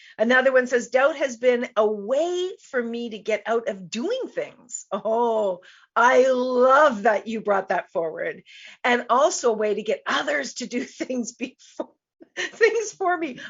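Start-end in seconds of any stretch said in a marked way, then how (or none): 8.9-13.4 speaking through laughter, laughing while talking. Reading a listener's comment aloud on the show, laughing while speaking. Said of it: "I'm laughing because that's so brilliant".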